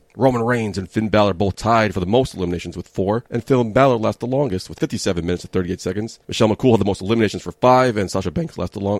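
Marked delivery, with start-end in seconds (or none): 8.0-9.0 voice cracking with excitement. Reading out Royal Rumble records, voice cracking with excitement. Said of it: "my voice cracked there. Got excited".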